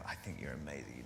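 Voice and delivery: low, soft, smooth flattering voice.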